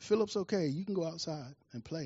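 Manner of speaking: very calm, soft, reassuring tone. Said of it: "said very calmly".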